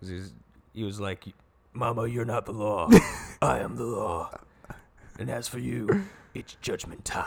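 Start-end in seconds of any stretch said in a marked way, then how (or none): 1.7-7.2 acted rough heroic voice. Retelling a movie line, imitating Judge Dredd's Batman-like voice. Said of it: "Just talks like Batman".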